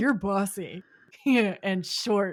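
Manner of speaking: put-on drunk voice. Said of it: "when he was drunk in the doll episode".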